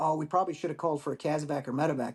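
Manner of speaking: plain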